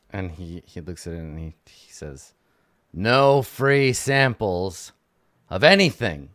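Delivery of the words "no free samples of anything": high, loud, grumpy gnome voice. Voicing a rock gnome shopkeeper refusing samples: scowling gnome. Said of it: "He scowls at you".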